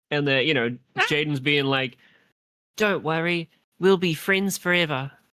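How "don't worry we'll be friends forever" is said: put-on high-pitched New Zealand accent. Acting out what Jaden says to a friend, in a New Zealand accent. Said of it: "they sound like they're from New Zealand".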